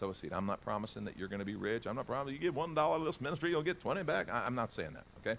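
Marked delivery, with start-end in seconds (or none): 2.3-4.3 put-on American Southern accent. Talking about giving to the ministry, line in a put-on southern accent. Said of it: "I wouldn't say it with a southern voice like that".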